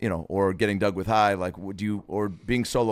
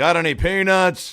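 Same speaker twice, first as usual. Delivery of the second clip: very high-pitched, loud, stoned-sounding chatter; 10 semitones higher, 8 dB louder than usual. Doing an impression of a too-high plane passenger talking to the pilot: Dave Attell impression. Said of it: "Here's Dave Attell, um, being a little too high on the plane".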